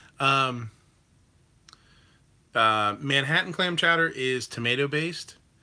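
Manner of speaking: normal talking voice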